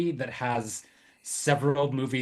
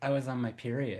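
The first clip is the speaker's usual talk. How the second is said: mock sultry, seductive tone, quieter; 6 dB quieter than usual. Retelling a film character telling the manager something: imitating a sultry voice. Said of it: "she's saying it in a very, like, sultry".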